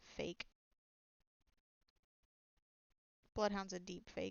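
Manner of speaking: hushed whisper. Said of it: "lean down and whisper into the sword".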